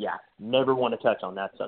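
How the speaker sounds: ordinary talk, nothing marked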